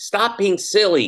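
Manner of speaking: mock angry tone, very high-pitched. Retelling what the daughter says to the speaker: imitating someone angry. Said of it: "like, angry".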